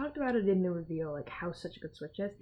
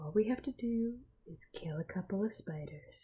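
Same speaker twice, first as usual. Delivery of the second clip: mock-calm nonchalant delivery, much quieter; 8 dB quieter than usual. Recapping a scene, quoting how a character says a line, imitating nonchalant calm. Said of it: "It's so nonchalant, calm".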